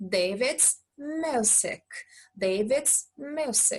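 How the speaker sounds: very slow, careful delivery.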